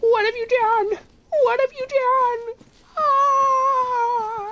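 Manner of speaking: very high, slow, loud, distraught crying wail. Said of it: "so funny the way he says it".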